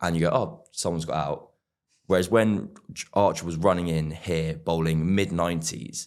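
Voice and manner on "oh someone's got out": plain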